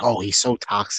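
plain

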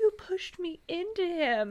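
mock hurt, high, slow, near-tearful voice. Retelling what a friend said after a haunted house: imitating someone almost in tears. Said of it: "almost in tears".

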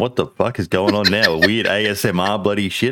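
usual speaking voice

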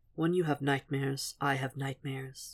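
barely audible, very low, quiet murmur. Narrator reading a story, a man answers Will: murmured very low. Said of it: "he murmured so low".

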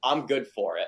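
ordinary talk

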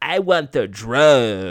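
put-on lousy New York accent, slow, drawn-out drug. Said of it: "now he has a really shitty New York accent".

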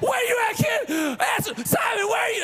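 very high, screaming shout. Parent retells searching everywhere for missing child Simon; re-enacting screaming for a lost child. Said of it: "I'm screaming".

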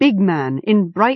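ordinary delivery

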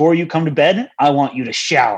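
put-on mean-sounding voice. Retelling what a wife told her husband as she went to bed, imitating her sounding mean. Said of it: "Like all mean".

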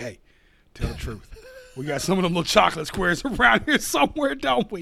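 put-on drunk voice. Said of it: "I'm drunk".

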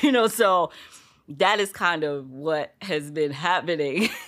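loud, with laughter running through the words. Speaker telling listeners about her recent days, laughing while talking. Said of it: "Why am I laughing?".

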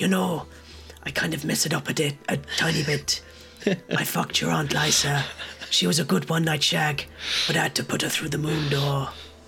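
scheming voice, not quite deep. Trying out a Game of Thrones character impression: Littlefinger impression. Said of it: "I could do kind of your little finger".

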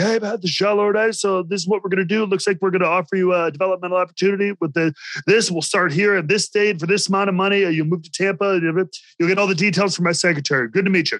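curt, brisk, fast, all-business delivery. Retelling how a man offered him a developmental opportunity, the speaker mimics him in business mode. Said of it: "Like he was in business mode".

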